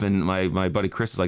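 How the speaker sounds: ordinary talk, nothing marked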